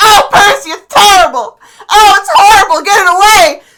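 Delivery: terrified wail, very high, very loud, shrieking panic. Voicing a character cornered by a cat, Foxglove terrified. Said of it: "Foxglove is pit up in the corner".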